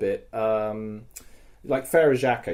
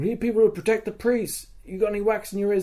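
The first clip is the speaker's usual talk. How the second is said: pitched-up, loud shouted call; 8 semitones higher than usual. Retelling what someone yelled at the speaker: imitating someone yelling. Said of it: "someone yelled at me".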